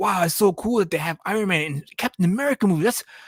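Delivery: put-on high, gushing, awed, starstruck kid-like voice. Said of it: "be like".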